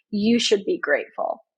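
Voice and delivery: openly sarcastic, clearly not meant at all. Quoting what people are told about quitting: sarcastic. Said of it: "that I am saying sarcastically".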